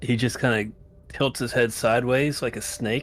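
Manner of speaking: plain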